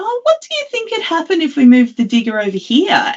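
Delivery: very high, put-on voice. Retelling how she suggests moving the digger to the shift boss: imitating her own slightly different voice. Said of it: "if I put on a slightly different voice and say".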